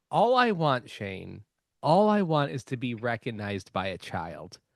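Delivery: deliberately creepy, unsettling put-on tone. Saying a wish on purpose to sound even more creepy: deliberately creepy delivery. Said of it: "I'm gonna make it even more creepy".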